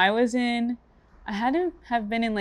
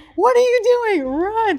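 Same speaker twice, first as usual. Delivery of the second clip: mock, very high, loud, furious shout; 13 semitones higher, 7 dB louder than usual. Retelling her dad yelling from the stands during her race, imitating an angry yell. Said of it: "Like he's angry".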